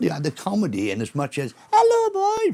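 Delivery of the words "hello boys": very high, loud, piped-up comedic delivery. Recalling the comedy in Trouble Gang, give an example in Willie's comedy voice. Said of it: "That was his voice".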